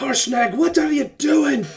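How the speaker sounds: giant voice yelling, loud and very high-pitched. Voicing a giant that got hit, yelling at another giant: yelling giant. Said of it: "just yelling".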